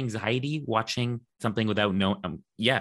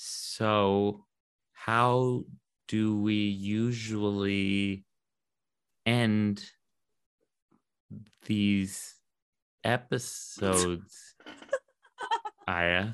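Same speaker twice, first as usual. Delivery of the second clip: very slow, stretched-out slow-motion delivery. Asking how episodes usually end, very slow, like slow motion. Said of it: "You sound like you're in slow motion".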